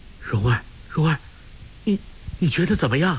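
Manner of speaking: trembling, quavering voice shaking with fear. Narrator voicing him as he rushes to hold her up, trembling voice. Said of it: "颤声说".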